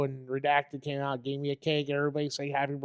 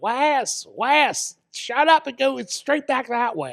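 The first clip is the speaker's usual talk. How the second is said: put-on very high, very loud, drawn-out booming Kentucky accent; 9 semitones higher, 8 dB louder than usual. Retelling what a friend said in a restaurant, Kentucky accent. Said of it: "in his Kentucky accent".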